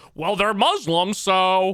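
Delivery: loud, slow, blunt caricature voice. Mocking the commentator's likely take: imitating Doctor Chud. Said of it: "Doctor Chud over here is like".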